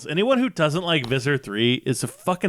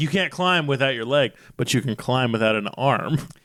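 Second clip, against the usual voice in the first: usual speaking voice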